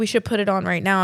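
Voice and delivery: ordinary delivery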